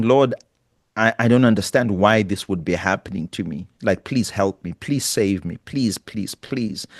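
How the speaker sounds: acted-out pleading and begging, crying and tearful. Recounting a desperate prayer to god, retelling pleading and crying. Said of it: "I'm just pleading and crying".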